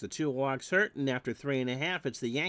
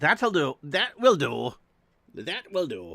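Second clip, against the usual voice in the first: clumsy attempt at a Scottish accent, loud, belted out; 6 dB louder than usual. Explaining how a phrase is said, bad Groundskeeper Willie Scottish accent. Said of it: "I really can't do a Scottish accent".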